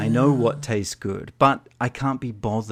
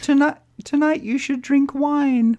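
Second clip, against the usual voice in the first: tiny, very high little lady voice; 5 dB louder than usual. Voicing the little voice in his head: little lady's voice. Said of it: "It's like a little lady's voice".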